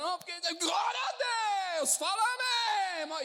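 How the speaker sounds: high, loud shout at full cry. Retelling a prayer group moment while preaching: imitating someone shouting. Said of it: "E assim, gritando".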